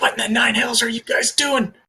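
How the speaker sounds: soft, high-pitched half-whisper. The narrator voices Kalsheen addressing the group: Kalsheen half-whispering. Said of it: "Kalsheen is just like whispering".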